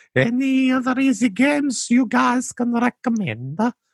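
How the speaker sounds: put-on poor Italian accent.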